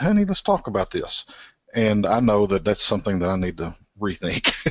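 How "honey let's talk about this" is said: sugary, dainty, sweet, very high little voice. Quoting what she says when he irritates her twice, imitating her sweet little voice. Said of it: "in her sweet little voice".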